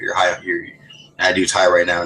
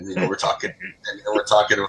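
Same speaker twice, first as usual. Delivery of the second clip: usual speaking voice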